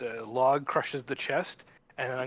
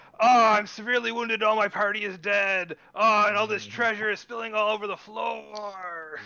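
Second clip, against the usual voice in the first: high, loud dwarf yell, floor dragged out; 8 semitones higher, 5 dB louder than usual. A player yells in Dwarvish as their character: yelling in Dwarvish. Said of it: "I'll yell in Dwarvish".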